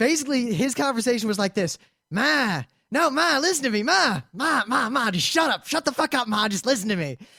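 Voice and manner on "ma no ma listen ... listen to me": rude, ranting, talking over. Retelling a train passenger's loud phone call to his mother: imitating a man on the phone. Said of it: "in that exact voice".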